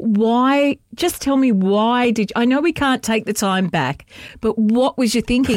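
plain

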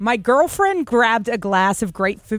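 put-on American accent, read aloud. Reading a tongue twister aloud for a challenge: American accent. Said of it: "read out in an American accent".

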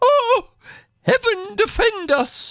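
very high, frightened, terrified cry. Narrating the mother's reaction on hearing a woman's cry; exclaiming. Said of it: "exclaimed my mother".

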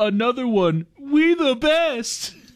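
shouting with rising pitch. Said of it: "He's just yelling".

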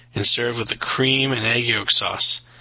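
ordinary delivery, nothing marked

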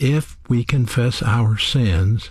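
if given stress. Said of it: "Notice the word if".

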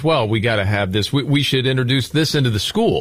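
ordinary delivery

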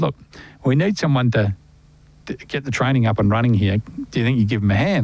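ordinary delivery

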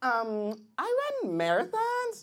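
put-on young woman's voice.

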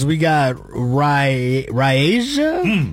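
very slow, stretched-out delivery.

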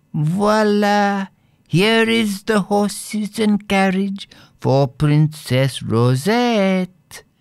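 very high, clear, silvery ringing call. A narrator reads a little jockey calling out, in a silvery voice. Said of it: "called out in a silvery voice".

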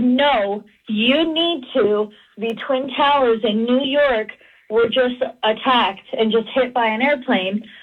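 ordinary delivery

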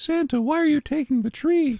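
put-on high childlike cartoon voice. Remembering a voice actress, a speaker quotes her role in a Cindy Lou Who voice. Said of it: "She voiced Cindy Lou Who".

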